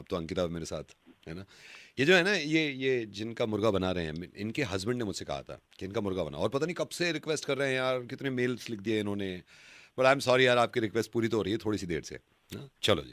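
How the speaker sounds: quiet aside, low and soft.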